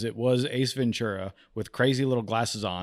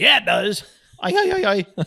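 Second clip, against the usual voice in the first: put-on goofy comic voice, higher and louder; 11 semitones higher, 7 dB louder than usual. Retelling a wedding seat exchange, imitating a guest like Ace Ventura. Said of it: "I'm kind of doing a little".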